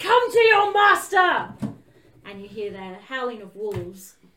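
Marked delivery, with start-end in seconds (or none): 0.0-1.5 shrill, very loud, high-pitched, drawn-out yell. Voicing a wounded character calling out the window: yelling out a window. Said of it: "yells out the window".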